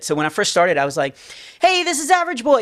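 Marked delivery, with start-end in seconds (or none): 1.6-2.6 put-on child voice pushed very high. Retelling a first recording session, the actor does the high Average Boy voice. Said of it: "I made it high".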